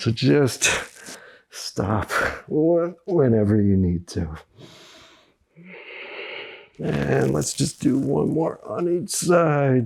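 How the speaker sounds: straining from effort. Guiding a core exercise while doing it: straining voice. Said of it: "you can hear the strain in my voice".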